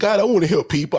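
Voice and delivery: put-on tearful, snotty weeping, crying voice. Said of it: "I'm crying and snotting all up".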